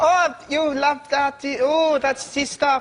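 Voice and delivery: put-on high, slow, drawn-out German accent, abandoned partway. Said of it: "one of them just go".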